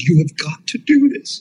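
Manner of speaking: deliberate crying voice. Speaker recounts a friend phoning him in tears: imitating a friend in tears. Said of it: "and he's in tears".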